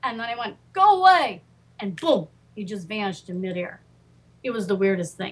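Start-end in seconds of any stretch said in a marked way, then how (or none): 0.7-1.4 mock very high, very firm voice. Retelling ordering a spirit to leave: imitating a firm command. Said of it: "you must be very, very firm with spirits".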